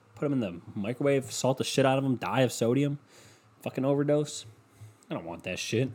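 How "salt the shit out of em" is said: ordinary talk, nothing marked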